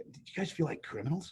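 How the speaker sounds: hushed whisper under the breath, as an aside. Retelling a quiet remark to fellow actors at a casting: his own words under his breath. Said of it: "I said under my breath".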